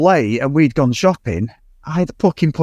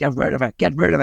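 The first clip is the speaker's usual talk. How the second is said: rough, raspy, creaky character voice; 4 dB quieter than usual. Retelling a scene from a show, imitating Bletchley's voice. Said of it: "And he speaks like that, doesn't he?".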